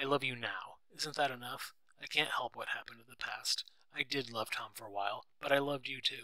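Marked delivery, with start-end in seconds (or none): none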